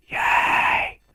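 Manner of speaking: loud, excited cheer. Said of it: "that was loud".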